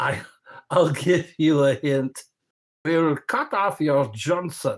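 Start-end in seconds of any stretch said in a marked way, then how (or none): 2.8-4.8 put-on German accent. Speaker quoting a line as a hint to the listener, German accent. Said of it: "in a in a German accent".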